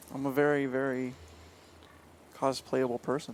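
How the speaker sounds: deadpan, tragic drone, low and flat monotone. Answering a relayed question about cosplaying, in a flat monotone. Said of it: "I like how you got real monotone".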